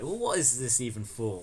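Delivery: normal talking voice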